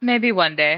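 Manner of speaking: amused, chuckling while speaking. Answering a fellow adventurer's question about surviving hellfire, chuckling while speaking. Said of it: "Lil chuckles and goes".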